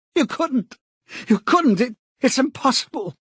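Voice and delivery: very high, cracking, panicked cry. Narrating a novel, the man cries out to O'Brien: high, cracked voice. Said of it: "he cried out in a high, cracked voice".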